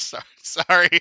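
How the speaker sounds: laughing while talking. Apologizing to the others mid-conversation: laughing while talking. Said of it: "I can't stop laughing".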